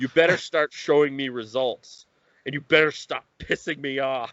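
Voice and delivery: put-on angry voice. Retelling what he said to the team, imitating an angry threat. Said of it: "you you need to calm down".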